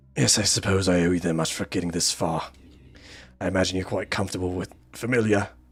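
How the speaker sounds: attempted British accent turning Australian. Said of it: "Do a British accent".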